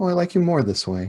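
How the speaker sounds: very high-pitched, simple delivery. A character, led into the glade by a steward, speaks, very quiet voice. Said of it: "Reverse will just very quietly be like".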